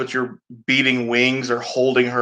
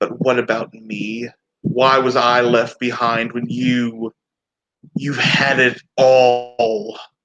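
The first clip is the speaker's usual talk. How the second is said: bitter, sneering villain voice, "all" drawn out. A game master speaks as Mother Tribute to the players, sneering. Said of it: "sneering at you all".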